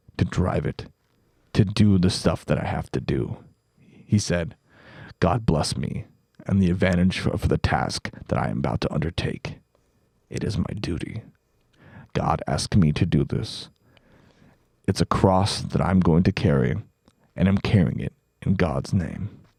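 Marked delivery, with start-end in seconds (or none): 5.2-19.3 commercial voiceover announcer voice. Speaker quoting what a man said, in a truck-commercial announcer voice. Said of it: "Why do you sound like you should be voicing over a truck commercial".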